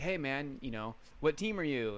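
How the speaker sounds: ordinary delivery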